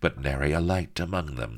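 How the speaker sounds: plain reading voice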